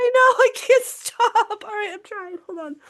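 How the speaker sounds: very high-pitched, crying with laughter. Speaker can't stop laughing while reading a serious news story, laughing to tears. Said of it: "I'm legit crying".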